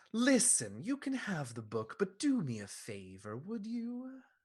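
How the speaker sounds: high, swooping voice of a talking skull. Voicing a flaming skull on a throne greeting a player: voice of a skull on a throne. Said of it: "a voice, uh, emanates from the throne and says".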